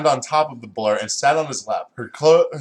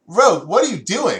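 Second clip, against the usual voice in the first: afraid, frightened, much higher; 6 semitones higher than usual. Narrator reading a character's line in a story, afraid voice. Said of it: "Why do you sound so afraid?".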